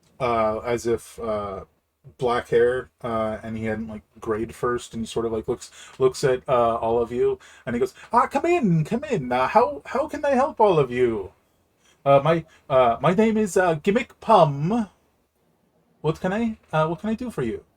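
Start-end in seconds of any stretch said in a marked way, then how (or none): 8.1-17.6 high, sing-song, overly friendly and eager tone. Voicing a portly balding man behind a desk greeting the group: too welcoming character voice. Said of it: "almost too welcoming smile on his face".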